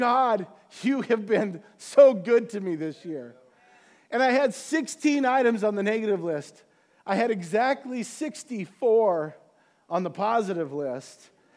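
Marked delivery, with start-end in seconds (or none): 0.0-3.3 put-on tearful crying voice, louder. Retelling a prayer of thanks after listing the year's blessings: retelling a tearful prayer. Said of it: "I'm crying".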